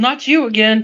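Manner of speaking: mild half-yell in a character voice. Greeting a returning character in the game, yelling in character. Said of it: "preemptively yelled".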